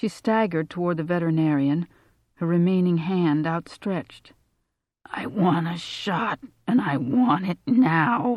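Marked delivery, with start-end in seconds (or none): 5.1-8.4 slow, dragged-out, croaking voice. Narrator voicing Marielle speaking to the veterinarian, croaking. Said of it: "she croaked".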